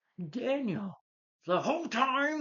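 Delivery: very high, very slow, drawn-out angry cry. Listing an actress's films, then imitating Sally Field getting mad. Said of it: "I'm just kind of trying to imitate her".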